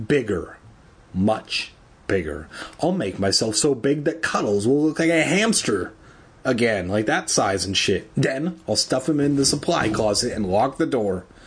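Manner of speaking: usual speaking voice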